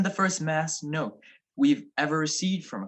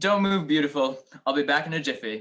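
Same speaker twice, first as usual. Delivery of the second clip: ordinary delivery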